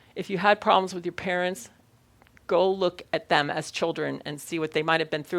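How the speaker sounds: plain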